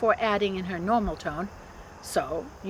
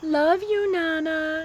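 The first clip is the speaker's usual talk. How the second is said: put-on lilting, sing-song voice, much higher in pitch; 7 semitones higher than usual. Pulling Jem close by the arm, speaking in Sophie's lilting voice. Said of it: "in Sophie's lilting voice".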